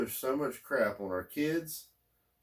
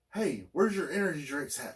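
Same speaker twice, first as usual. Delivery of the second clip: nervy, cagey, jittery voice; 3 semitones higher than usual. Retelling a stranger asking a clerk for energy drinks: imitating a cagey, jittery man. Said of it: "And he's all cagey".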